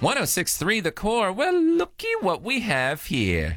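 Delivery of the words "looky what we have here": slow, drawn-out, stretched voice with swooping pitch. Greeting a phone call on air: Biff from Back to the Future voice. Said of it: "that sounded very Biff from Back to the Future".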